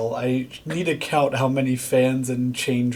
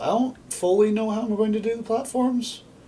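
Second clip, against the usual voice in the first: voice breaking and cracking, very high-pitched; 9 semitones higher than usual. Talking through a build out loud, voice cracking. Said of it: "That sounded like a voice crack".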